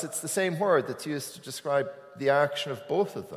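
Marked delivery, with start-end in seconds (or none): none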